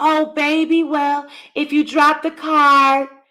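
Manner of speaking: put-on motherly gentleness, high and slow. Imitating how a mother talks to her kid: fake soft voice. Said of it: "putting on that fake soft ass voice".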